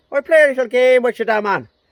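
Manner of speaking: put-on heavy Dublin Irish accent, high-pitched and loud. Telling a story from his time in Germany, the speaker quotes a guy: strong Dublin accent. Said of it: "really like strong Dublin accent".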